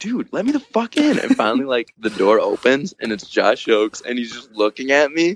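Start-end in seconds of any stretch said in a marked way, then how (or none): 0.0-1.2 mock shrill yell, very high-pitched and loud. Speaker retells demanding through a door to be let in, retelling a yell. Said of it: "I'm literally yelling".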